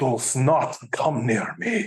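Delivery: put-on slow, tough-sounding, hardcore Russian accent. Speaker recalls a girl reading a female comic character's line: imitating her russian accent. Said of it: "she did this like awesome Russian accent".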